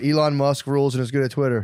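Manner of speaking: ordinary delivery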